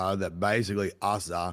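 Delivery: plain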